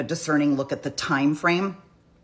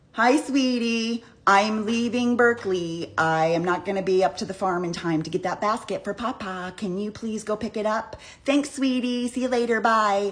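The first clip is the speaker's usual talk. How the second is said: play-acted syrupy, sweet, lovey-dovey tone, pitched up; 6 semitones higher than usual. Paraphrasing a typical alibi voice message: imitating a lovey-dovey call. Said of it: "it's a lovey-dovey call".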